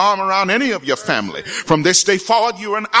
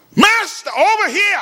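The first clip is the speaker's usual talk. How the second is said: put-on desperate call, very high pitched; 12 semitones higher than usual. Acting out lepers calling out to Jesus in a crowd: acting out a desperate call. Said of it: "desperate to attract the attention".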